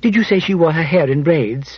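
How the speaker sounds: plain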